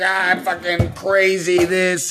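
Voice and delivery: mock crazed, unhinged, drawn-out ranting scream. Retelling getting on the internet: imitating own past screaming. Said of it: "screaming at the top of my lungs".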